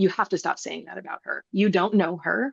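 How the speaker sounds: put-on stern voice. Retelling a phone talk defending a sister: imitating own stern voice. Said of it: "I was very stern".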